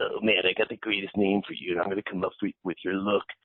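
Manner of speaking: put-on Chicago accent. Telling how Jim reacted to the idea of a pop band: imitating Jim's Chicago accent. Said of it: "in his trademark Chicago accent".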